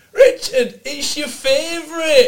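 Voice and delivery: very high, very loud motherly shouting. Retelling how mother came over shouting to him: imitating mother shouting. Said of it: "and shouting".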